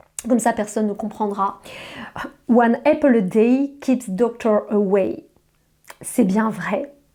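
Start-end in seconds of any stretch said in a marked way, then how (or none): 2.5-5.3 slow put-on English accent, each word drawn out. A French speaker switches to English so no one will understand: English accent. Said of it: "je vais le dire en anglais avec l'accent".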